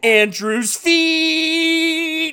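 high, very slow, put-on hype-man shout. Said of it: "Like [name] or something".

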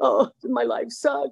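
tearful, sobbing, high, slow crying voice. Retelling a phone call with a coworker from work, imitating own past crying.

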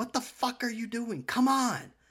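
very high, shrill, loud yell. Recounting yelling inside their vehicle after the kids got out at school, retelling yelling. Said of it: "And I'm yelling in my vehicle".

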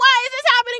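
mock very high, crying, shocked scream. Telling of a lizard in the shoe, reenacting screaming and crying. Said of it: "I was like crying. I was screaming".

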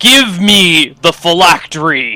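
booming shout. Narrator voices a figure trying a locked door, booming voice. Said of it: "his voice booming through the open ceiling".

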